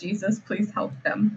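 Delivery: quiet, murmured under the breath. Voicing Hannah as the group sits at the table, praying under her breath. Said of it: "praying under her breath".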